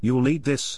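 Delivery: plain reading voice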